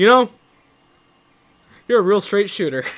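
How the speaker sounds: high-pitched dripping sarcasm. Retelling what a man said after counting the money; imitating a sarcastic tone. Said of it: "he sounded super fucking sarcastic".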